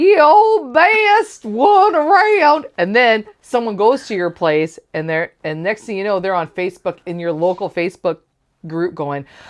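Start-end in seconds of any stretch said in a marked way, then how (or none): 0.0-2.7 very high, very slow put-on southern commercial voice. Reading out how a local business is advertised, southern accent. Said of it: "because that's just how I read them".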